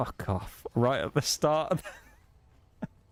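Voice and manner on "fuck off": breathy whisper, soft and kept deliberately quiet. Retelling someone muttering at a meeting's start: imitating a whispered insult. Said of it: "whispery kind of voice".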